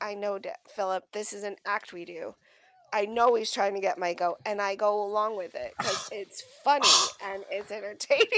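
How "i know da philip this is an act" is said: plain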